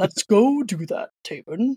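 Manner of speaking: put-on deep voice. Opening a podcast interview, a host speaks to Taven in a very deep voice. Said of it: "my voice is going to get very deep".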